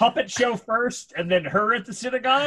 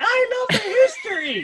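high, slow squeaky sock-puppet voice. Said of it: "and the fan's like".

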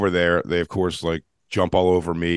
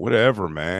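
put-on drunk man's manner of speech. Retelling what a drunk guy said to the superintendent: imitating a drunk man. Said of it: "He's just drunk".

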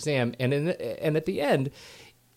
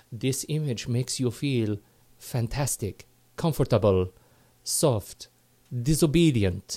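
put-on Swedish accent. Quoting the Swedish focus group moderator voiceover from a quiz: put-on Swedish accent. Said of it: "you do the accent".

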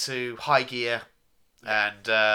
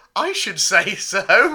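very loud, high, condescending patronising voice; 8 semitones higher, 8 dB louder than usual. Describing a scene where Hartman answers the Doctor, put-on patronising voice. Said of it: "in the most patronising voice imaginable".

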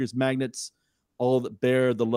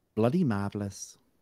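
put-on grandma-style delivery; 3 dB quieter than usual. Giving the top rating on the hosts' rating scale, saying it like a nan would say it. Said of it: "I love that you say it like a Nan would say".

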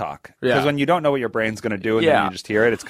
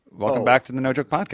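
offhand, casual, thrown-away delivery. Repeating a podcast welcome to try a fresh take: thrown away, casual delivery. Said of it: "Throw it away".

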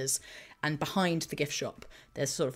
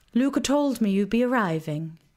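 put-on woman's voice, higher and louder; 7 semitones higher, 8 dB louder than usual. Voicing a woman who greets the players in a museum: Casperia character voice. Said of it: "this human woman, grey hair, pulled back in a very tight bun".

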